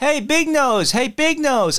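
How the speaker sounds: high, long, drawn-out, stretched street shout. Telling a story, imitating a neighbour across the road shouting, retelling a neighbour's shout. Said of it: "started shouting".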